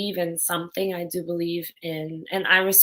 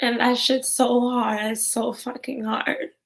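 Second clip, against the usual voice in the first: high, tearful crying voice, voice breaking; 5 semitones higher than usual. Speaker talking about a woman who didn't want to die, crying. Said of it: "I hate when I cry every time I".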